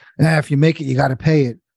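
cranky, half-swallowed grumble under the breath. Retelling what a tax accountant answered: imitating a grumpy old man mumbling. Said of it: "this grumpy old guy just mumbles".

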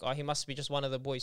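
ordinary talk

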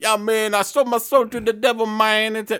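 put-on Jamaican accent. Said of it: "he talks like he's from Jamaica".

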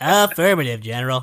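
nasal put-on voice. Quoting a game line in a Fox voice. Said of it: "that was my Fox".

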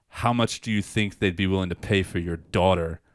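normal talking voice

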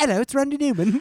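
high-pitched put-on British accent. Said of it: "like, a British accent".

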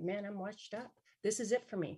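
plain

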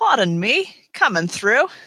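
put-on British accent. Reading a weapon's flavor text aloud for a laugh: british accent. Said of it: "with that British accent".

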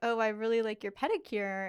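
plain

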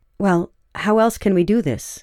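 ordinary delivery

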